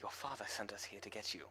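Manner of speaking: barely audible, hushed, breathy whisper. Voicing a character in a tabletop game: whispering. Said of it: "Eloquin's just gonna whisper".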